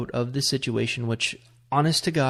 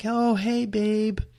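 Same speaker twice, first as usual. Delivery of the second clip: very high, all-cute sweetness, acted out; 10 semitones higher than usual. Retelling picking up a call expected from a girlfriend: imitating own cute greeting. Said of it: "and I'm all cute".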